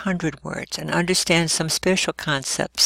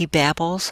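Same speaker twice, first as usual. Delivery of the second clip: ordinary talk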